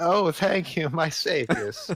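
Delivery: high, very slow, drawn-out witch voice. Voicing the rescued witch thanking the party as the door opens: witch voice. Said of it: "that's a good voice I just did".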